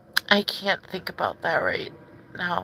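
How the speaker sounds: high, choked-up, tearful voice on the edge of crying. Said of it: "I can't even say that without crying".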